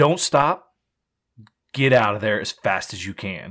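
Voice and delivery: grave, no-nonsense, dead serious tone. Retelling how a man told the group to get out of there, imitating a super serious warning. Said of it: "he gets super serious".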